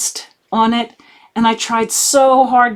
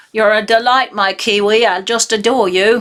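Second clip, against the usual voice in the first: bad, terrible put-on New Zealand accent. Addressing someone from New Zealand, in a bad New Zealand accent. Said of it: "that was a terrible attempt at a New Zealand accent".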